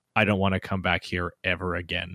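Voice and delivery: put-on flat, calm delivery. Retelling Ben's goodbye to the others, speaker quotes him: imitating a deadpan, calm remark. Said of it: "deadpan calmly says".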